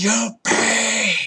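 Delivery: very high, very loud screeching monster shriek. Voicing a furious Manticore after a failed persuasion: shrieking monster. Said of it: "it shrieks".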